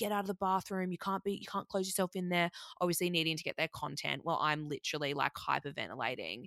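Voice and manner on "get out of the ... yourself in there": put-on insistent, urgent yelling. Retelling what the camera crew shouted through the bathroom door: imitating crew yelling. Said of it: "crew and shit yelling at me".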